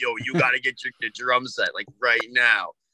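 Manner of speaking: put-on low old truck driver voice. Speaker retells what his babysitter told his parents, in an old truck driver voice. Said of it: "Like an old truck driver?".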